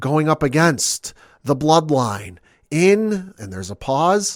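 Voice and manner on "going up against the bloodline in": slow, mock disgusted, dripping with utmost distaste. Retelling an announcement about a match: imitating Paul Heyman's utmost distaste. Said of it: "he says with the utmost distaste in his".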